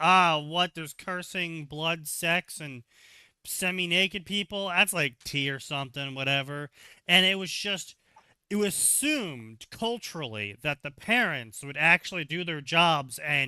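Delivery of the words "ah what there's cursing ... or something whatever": normal talking voice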